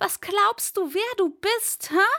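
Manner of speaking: very high, shrill, unrestrained all-out screaming. A man screams at the castle lord, who only laughs, screaming like never before. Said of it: "Hassan schrie, wie er noch nie geschrien hatte".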